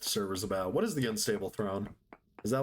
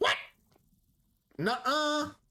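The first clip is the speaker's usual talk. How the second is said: mock-sassy voice, much higher pitch.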